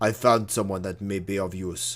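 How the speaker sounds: put-on Russian voice. Streamer redoes a character's line after using the wrong accent, Russian accent. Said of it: "I was meant to do a Russian voice for him".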